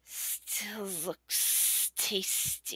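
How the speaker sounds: very hissy, whispered snake voice. Game master voices a snake looking toward Dozel, in a hissy snake voice. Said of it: "a very hissy, hard to talk voice".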